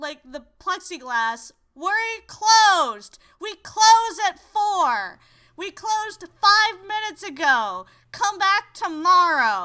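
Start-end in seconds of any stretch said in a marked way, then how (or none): 1.7-9.6 loud, shrill, cranky yell. Retelling how a cranky woman at the courthouse window yelled: imitating a cranky woman yelling. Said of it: "slams the window down in front of my mother and yells through".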